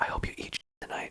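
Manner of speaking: soft whisper, very close to the ear. Retelling what was whispered into a comic's ear: imitating a whisper. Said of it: "I was whispering in his ear".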